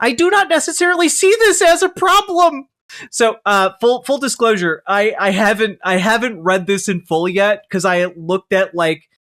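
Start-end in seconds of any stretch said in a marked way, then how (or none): 0.0-2.7 put-on lecturing pundit voice, higher pitch. Reading an untitled submission aloud: Jordan Peterson voice. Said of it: "Do the Jordan Peterson voice?".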